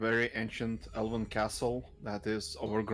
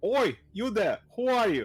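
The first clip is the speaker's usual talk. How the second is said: shrill, high, loud shout from a distance; 11 semitones higher, 7 dB louder than usual. Narrating a game scene as somebody yells from the castle: yelling. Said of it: "you hear somebody yelling".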